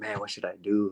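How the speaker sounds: put-on crying voice. Retelling words said in the bathroom: imitating own past crying.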